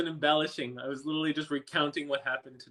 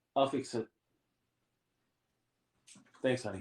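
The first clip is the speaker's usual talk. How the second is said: commanding, authoritative tone, kept deep; 4 semitones lower, 4 dB quieter than usual. Answering a spouse who is showing something: authoritative voice. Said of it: "I sound so authoritative".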